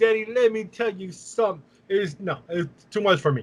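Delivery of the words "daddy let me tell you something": pro-wrestling promo voice and cadence. Mocking a wrestler's promos that always sound the same: imitating The Pope's promo voice. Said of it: "He sounds like Dusty Rhodes".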